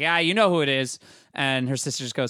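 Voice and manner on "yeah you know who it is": sarcastic, sassy, snarky, dismissive tone. Retelling a movie scene where she knocks on her sister's door: imitating snarky Lindsay Lohan. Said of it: "she's snarky, like".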